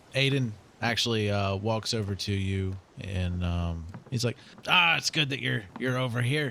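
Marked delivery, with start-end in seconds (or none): 4.6-6.5 fast, rattled-off pirate voice. Game master voices Aiden walking over to the players: Aiden in a pirate voice. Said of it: "I'm doing more of a pirate voice".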